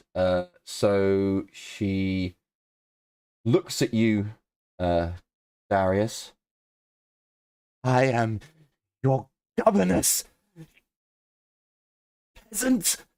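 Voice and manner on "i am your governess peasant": frightened, barely held together, rising pitched-up voice. Voicing a captive governess answering an interrogator: fearful voice. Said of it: "There is fear in her voice".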